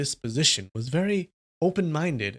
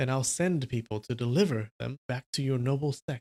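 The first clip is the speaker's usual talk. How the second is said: ordinary delivery, nothing marked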